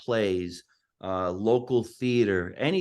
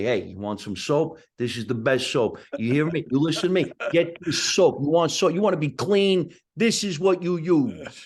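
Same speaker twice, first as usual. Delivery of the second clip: heavy New Jersey accent, laid on thick, pitched up; 5 semitones higher, 4 dB louder than usual. Showing how he pitches a product as spokesperson: thick New Jersey accent. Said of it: "took my accent and made it even thicker".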